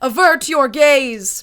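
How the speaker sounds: booming, amplified-sounding voice, words drawn out. Game master narrates to players as the daggers go in, in Fiola's booming voice. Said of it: "you all hear a booming voice".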